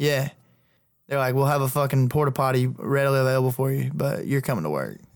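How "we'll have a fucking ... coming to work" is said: ordinary talk, nothing marked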